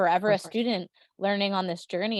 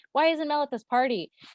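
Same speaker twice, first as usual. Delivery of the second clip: high-pitched crowd of voices yelling; 8 semitones higher, 3 dB louder than usual. Recalling people phoning from a party while she worked, imitating people yelling. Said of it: "13 people on the phone yelling at me".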